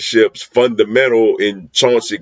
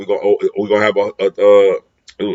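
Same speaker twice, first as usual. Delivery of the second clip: stuttering, stammering, tripping over words. Talking about the team's wide receivers, the speaker starts stuttering. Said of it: "I'm stuttering".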